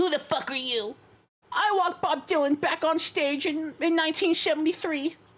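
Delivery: squeaky, enraged tiny man voice, very high. Imitating an angry tiny man from a video yelling at a trumpeter: impression of an angry tiny man. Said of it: "That's a crazy good impression".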